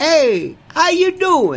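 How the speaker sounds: put-on high Italian accent. In an imagined introduction, the newly introduced friend greets everyone, Pepe Gonzalez in wrong Italian accent. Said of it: "That's an Italian amendment".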